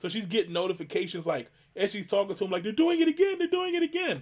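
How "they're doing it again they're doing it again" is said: acted-out, very high-pitched panicked freak-out. Retelling mom seeing new card charges during a phone call: imitating mom freaking out. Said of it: "My mom was freaking out".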